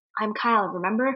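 soft, gentle, coaxing, pleading tone. Retelling how a character pleads in an argument: imitating Kyle getting soft. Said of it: "he'd get all soft".

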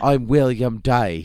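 poorly done, lousy British accent. Joking about a TV character's voice: bad British-accent William Day voice. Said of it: "I could do a better British accent than this".

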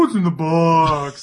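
slow, dopey, idiot-like reading. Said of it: "say it like the biggest idiot".

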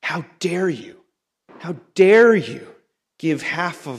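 indignant, bitter, resentful outburst. Acting out a man confronting someone over his returned brother, with deep resentment. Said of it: "you can hear the deep resentment in his voice".

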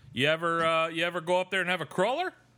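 high-pitched mock Canadian accent. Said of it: "in that accent".

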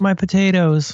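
mock sad child's voice. Retelling how she sobbed after a Minecraft mistake, in a little sad voice. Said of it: "In a little sad voice".

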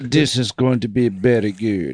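put-on Indian accent. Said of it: "I started with an Indian accent".

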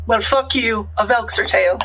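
normal talking voice

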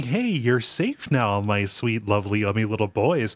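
put-on doting voice. Retelling how she talks to the boys she tied up: imitating doting talk. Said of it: "doting on them".

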